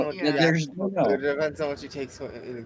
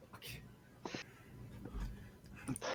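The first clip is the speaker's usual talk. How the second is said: really quiet muttering under the breath. Playing a character who flips a coin and looks at it: really quiet under the breath. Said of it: "a really quiet under her breath".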